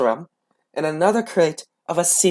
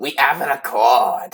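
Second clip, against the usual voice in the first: put-on pirate voice, lower; 3 semitones lower than usual. Asked to say the line as a pirate captain: Captain Barbossa voice. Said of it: "Captain Barbossa voice".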